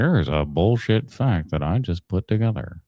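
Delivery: computer-generated AI narrator voiceover read. Describing a downloaded video, the speaker imitates the ai voice that comes on. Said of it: "some fucking A I voice comes on and just goes".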